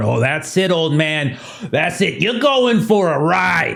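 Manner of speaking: high-pitched, furious, angry brute voice. Voicing a big guy storming at a player: angry big guy storming in. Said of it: "you see the big guy come storming around".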